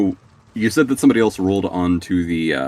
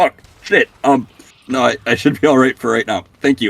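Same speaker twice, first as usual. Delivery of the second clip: flustered, sputtering stammering, higher and louder; 6 semitones higher, 5 dB louder than usual. Voicing a character caught off guard by an offered healing potion: sputtering. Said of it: "He kinda, like, sputters a little bit".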